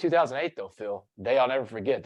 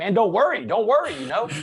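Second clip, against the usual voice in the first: acted-out screaming, pitched way up and loud; 9 semitones higher, 5 dB louder than usual. Retelling how he screamed back at a cop pinning him down, retelling his own scream. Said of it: "I screamed back at him".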